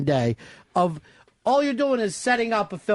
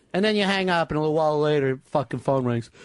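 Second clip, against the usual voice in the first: ordinary talk, nothing marked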